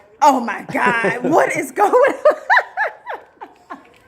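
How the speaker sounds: shocked, high-pitched exclamation.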